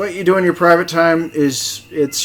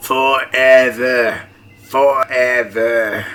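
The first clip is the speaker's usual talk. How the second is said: raspy smoker voice, much lower pitch; 4 semitones lower, 3 dB louder than usual. Answering a question about which map they like, in a raspy smoker voice. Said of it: "this is my raspy smoker voice".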